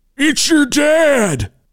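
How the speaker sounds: very high father voice, "dad" drawn out. Prank calling two people, pretending to be their dad: imitating their dad. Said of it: "You sounded just like our dad".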